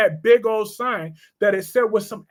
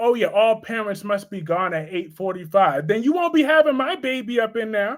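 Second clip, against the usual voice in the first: ordinary talk, nothing marked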